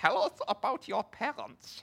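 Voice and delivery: very high, loud, put-on German accent. Retelling a therapy session, imitating the man asking about parents, in a German accent. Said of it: "with a German accent and a long beard goes".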